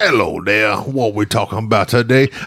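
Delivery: very deep, low, put-on Louisiana accent. A host shows how a caller from louisiana was greeted, in a put-on louisiana accent. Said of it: "I just love talking like this".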